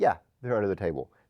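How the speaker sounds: acted-out sarcastic tone. Speaker acts out a woman's answer to the ss, retelling a sarcastic reply.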